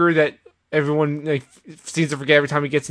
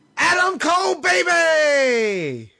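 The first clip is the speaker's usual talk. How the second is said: mock high-pitched swooping yell, "baby" stretched out; 12 semitones higher than usual. Repeating a wrestler's catchphrase the way he says it: yelling like Adam Cole. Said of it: "Don't, don't yell at me".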